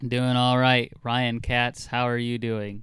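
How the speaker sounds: mechanical, robot-like voice. Answering the host's greeting on the show, robotic. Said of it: "Why are you always robotic with that?".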